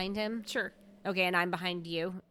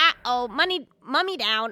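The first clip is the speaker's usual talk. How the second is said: squawking parrot voice, louder, much slower; 5 semitones higher, 9 dB louder than usual. Voicing a raven while playing, squawking like a parrot. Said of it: "I sound like a parrot".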